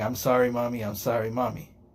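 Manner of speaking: put-on crying voice of a child, mock-tearful. Mocking a young man holding his mommy's hand and apologizing: imitating a kid crying. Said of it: "holding her hand while crying and saying".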